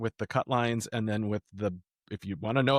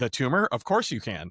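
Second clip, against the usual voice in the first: ordinary talk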